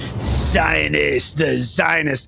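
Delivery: acted hostile, rough, angry, contemptuous sneer. Imitating enemies saying the word with an angry face: imitating an angry sneer. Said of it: "angry face".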